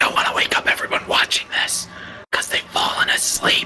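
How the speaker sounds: playful pretend whisper. Joking that viewers have fallen asleep during the reading: joking whisper. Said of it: "I'm whispering for a reason".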